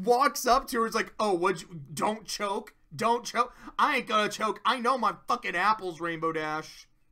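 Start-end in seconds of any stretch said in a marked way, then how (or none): 1.2-6.9 acted out, furious, fed-up, angry tone. Retelling a quiz scene where the character snaps back: imitating Applejack angrily. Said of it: "Applejack gets really fucking mad".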